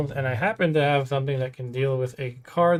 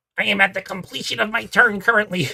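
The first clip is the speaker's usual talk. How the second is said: put-on nerdy voice, pitched up as far as possible; 7 semitones higher than usual. Describing how the players announce the end of a turn, the speaker uses a nerdy voice. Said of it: "You have to say it in that voice too".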